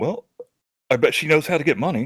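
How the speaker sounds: soft hushed whisper. Voicing a character who leans over to Arwen: whispering in character. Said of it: "I'll kind of whisper to Arwen".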